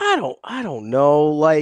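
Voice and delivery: plaintive, whining voice. Answering a co-host's question about practice, whiny voice. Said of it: "you sound so whiny".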